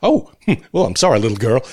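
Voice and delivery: put-on sheepish voice. Recounting a gag, the speaker quotes the bus driver, imitating a sheepish apology. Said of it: "the bus driver's sort of sheepish reaction".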